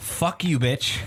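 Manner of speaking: put-on old-school New York inflection, snide tone.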